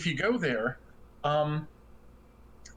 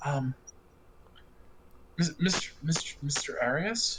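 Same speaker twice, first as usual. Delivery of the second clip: embarrassed whisper. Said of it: "she sheepishly goes".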